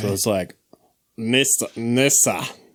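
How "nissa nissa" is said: put-on Scandinavian accent, fake Nordic sound. Trying to imitate a driver's accent for a friend, in a put-on Viking accent. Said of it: "my inner Viking accent".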